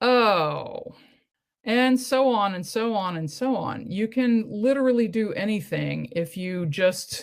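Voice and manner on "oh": sarcastic, mocking "oh". Showing how a lettered interjection sounds: sarcastic "oh".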